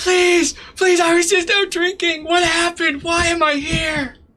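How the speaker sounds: very high screaming and crying. Describing a woman pushed down on a stage, imitating screaming and crying. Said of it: "she's just like screaming and crying".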